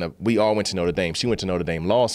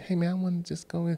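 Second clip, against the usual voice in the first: put-on meek, timid voice, higher, quieter, no bass; 10 semitones higher, 6 dB quieter than usual. Retelling asking a doorman to be let in: imitating own timid voice, no bass. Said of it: "he made me lose the bass in my voice".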